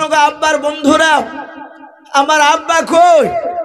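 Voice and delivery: crying, tearful voice.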